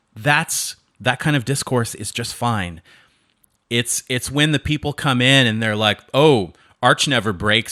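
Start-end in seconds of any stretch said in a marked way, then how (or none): 6.2-7.8 put-on sarcastic voice. Imitating people who mock someone's Linux choice, imitating a sarcastic tone. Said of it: "they're being all sarcastic".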